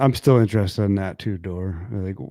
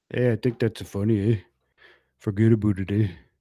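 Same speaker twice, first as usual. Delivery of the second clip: put-on Canadian accent. Imitating a Canadian coworker whose accent they love, Canadian accent impression. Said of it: "There is a Canadian guy at work".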